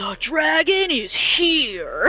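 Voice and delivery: silly, campy, very drawn-out, high, loud delivery. Retelling a minor character's game line, imitating a campy voice. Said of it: "it sounds so stupid and so campy".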